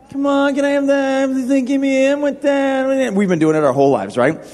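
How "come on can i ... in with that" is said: put-on slow, high, whiny, whining kid voice. Speaker acting out how listeners beg their dad for things, mock whining plea. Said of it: "you usually whine for".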